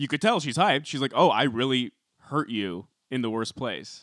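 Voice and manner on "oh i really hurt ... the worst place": normal talking voice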